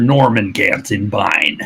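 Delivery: put-on old man character voice. Saying the character's full name in character: Norman Gantenbein character voice. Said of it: "it's way better to say in character".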